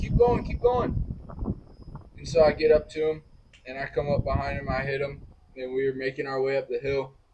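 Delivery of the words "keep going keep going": loud yell, pitched high and urgent. Speaker retelling yelling at a guy ahead on a hill, retelling own yell. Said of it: "I'm yelling at the guy".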